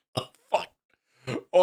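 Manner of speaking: very slow, swooping words through breathless, helpless laughter. Laughing too hard to breathe while talking: laughing too hard to talk. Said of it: "I'm laughing too hard".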